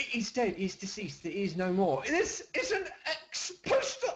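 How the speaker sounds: very bad put-on British accent, high and swooping. Joking around, the speaker puts on a bad british accent. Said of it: "He was doing a very bad British accent".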